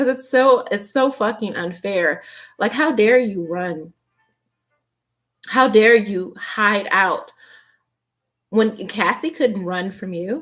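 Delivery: on the verge of tears, outraged, indignant. Speaker addressing the man who ran while Cassie couldn't, close to tears. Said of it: "I feel like I'm going to cry right now".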